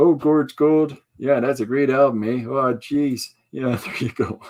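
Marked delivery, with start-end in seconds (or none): 0.0-3.3 put-on Canadian hoser accent. Telling how he fooled people for years, doing his Doug McKenzie voice. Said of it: "My best Doug McKenzie voice".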